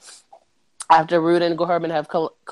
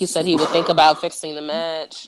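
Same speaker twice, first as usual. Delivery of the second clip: ordinary talk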